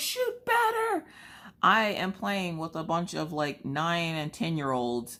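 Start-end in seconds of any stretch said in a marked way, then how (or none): 0.0-1.0 very high, exasperated, frustrated yelling. Retelling yelling at kids over a game headset during a gunfight, retelling a yell. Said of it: "I'm yelling at them to shoot better".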